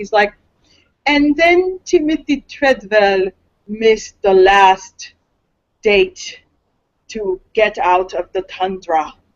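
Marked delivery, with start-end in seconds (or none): 1.1-9.1 narrated slow and dry. Imitating the documentary narration's dry delivery: dry Werner Herzog impression. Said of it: "he's very dry".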